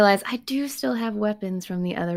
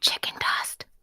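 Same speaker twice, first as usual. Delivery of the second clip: hushed whisper out of the corner of the mouth. Voicing a character prompting another player: whispering out of the side of mouth. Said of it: "I whisper out of the side of my mouth".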